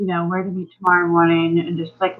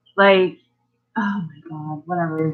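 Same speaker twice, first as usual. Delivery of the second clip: ordinary talk, nothing marked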